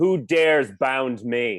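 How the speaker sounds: loud, shouted dark creature character yell. Narrating the character tearing free and turning on them, yelling in character. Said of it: "I turn around and yell at them".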